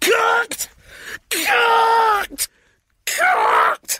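very high, shrill, swooping pot-rattling bellow. Narrator reading the crisp maker answering a nervous question, bellowing. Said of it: "He bellowed in a voice so loud".

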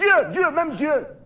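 heated rant pushed up high in pitch.

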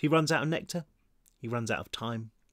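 ordinary delivery

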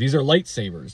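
ordinary talk, nothing marked

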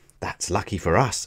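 plain reading voice

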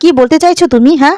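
ordinary delivery

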